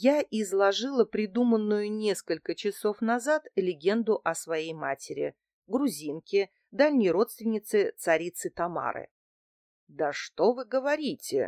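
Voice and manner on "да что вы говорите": exclaimed with a touch of doubt, faintly disbelieving. Reading Litvin's reply to the narrator's story about her icon, exclaiming with a hint of disbelief. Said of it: "воскликнул Литвин с оттенком недоверия в голосе".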